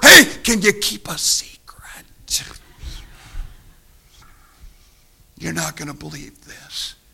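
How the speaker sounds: barely voiced, hushed, soft whisper. Speaker retells a man who sits down beside Bartimaeus: retelling a whisper. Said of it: "he says in a whisper".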